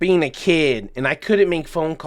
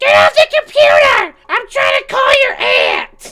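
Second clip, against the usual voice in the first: put-on piercing, very high, very loud grandma yell; 10 dB louder than usual. Recalling playing on the computer as a kid, imitating grandma yelling. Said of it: "the voice that I heard as a kid from my grandma".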